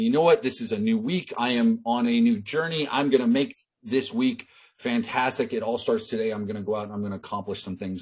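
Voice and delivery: ordinary talk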